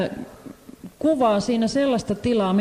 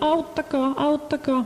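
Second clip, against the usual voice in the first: high, tiny little crying-out voice. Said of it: "huusi sieltä pienen pienellä äänellä".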